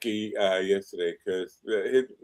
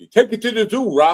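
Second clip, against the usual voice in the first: loud, very high-pitched fight-trainer voice; 12 semitones higher, 6 dB louder than usual. After the zoo suggestion, the speaker mimics the guy from the first Rocky. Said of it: "You sound like the guy from the first Rocky".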